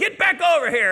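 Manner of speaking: very high, shrill yell. Telling how a parent in a Taco Bell called a child off the bars, retelling a parent's yell. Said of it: "yelled again".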